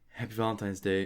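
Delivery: shy, sheepish, soft, bashful voice. Retelling how a character said a line, bashful imitation. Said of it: "He was all bashful. He's like".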